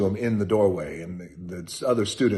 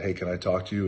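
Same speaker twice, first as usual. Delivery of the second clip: ordinary delivery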